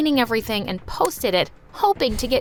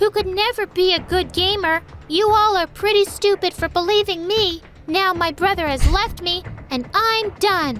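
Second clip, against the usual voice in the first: strange, shrill, high-pitched put-on voice; 8 semitones higher than usual. Voicing a figure with a covered face posting a fraud confession: weird shrill voice. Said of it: "speaking in a weird, shrill voice".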